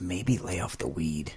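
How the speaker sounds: quiet, soft, low-pitched, hushed voice.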